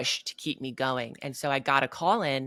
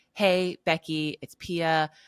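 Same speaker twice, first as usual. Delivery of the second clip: put-on very slow, heavy, drawn-out Swedish accent; 3 semitones higher than usual. Retelling a phone message from Pia, in a heavy Swedish accent. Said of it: "she's super Swedish. And so heavy accent".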